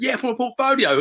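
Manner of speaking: excited, proud tone.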